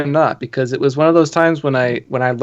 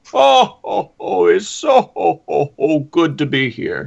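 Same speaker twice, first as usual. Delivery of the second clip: rough, creaky, raspy jolly ho-ho voice; 4 semitones higher than usual. Host greeting everybody after being told he sounds like Santa, Santa Claus impression. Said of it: "that's about as good a Santa Claus impression as I can get".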